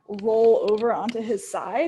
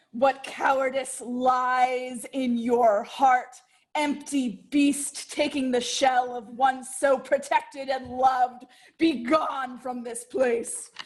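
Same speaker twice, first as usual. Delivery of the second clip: put-on scornful, mocking taunting voice. Voicing a character casting a mocking spell at a creature: in-character mocking taunt. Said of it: "and cast Vicious Mockery".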